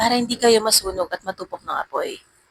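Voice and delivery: ordinary talk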